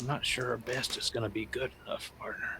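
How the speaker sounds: soft whisper. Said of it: "I whisper to Yuri".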